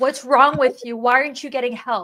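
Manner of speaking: put-on screaming sound. Retelling what a psychologist said to the group: imitating someone screaming. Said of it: "She screamed at us and said".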